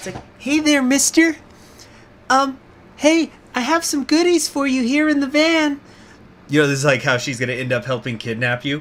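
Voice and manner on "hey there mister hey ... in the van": put-on, very high, loud little girl voice. Retelling a video where someone lures an adult man, in a little girl voice. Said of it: "they were making like a little girl voice".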